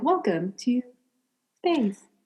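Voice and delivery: calm, modulated, soothing machine voice. Describing the voice you imagine, then demonstrating it: robot voice. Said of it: "very good robot voice".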